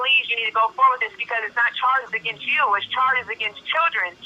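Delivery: ordinary talk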